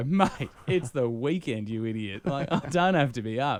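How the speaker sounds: teasing tone with words broken up by laughter. Retelling a late-night exchange with a mate, retelling while laughing. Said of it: "I start laughing and go".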